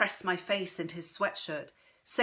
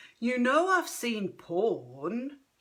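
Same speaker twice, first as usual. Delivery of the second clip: slow, fake-mature drawl, "porn" stretched out; 4 semitones higher, 4 dB louder than usual. The narrator voices him answering, in a drawling grown-up voice. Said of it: "he drawls in his most grown-up voice".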